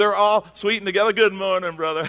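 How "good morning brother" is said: syrupy, sugary put-on Southern accent. Imitating churchgoers who turn sweet after fighting in the car: mock sweet Southern accent. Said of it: "And they're Southern all of a sudden".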